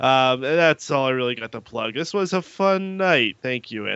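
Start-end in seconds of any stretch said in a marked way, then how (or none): 1.9-4.0 pitched-up tone with a sarcastic ring. Wrapping up the night and thanking someone, sounding unintentionally sarcastic. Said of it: "that sounded sarcastic, but it wasn't meant to be".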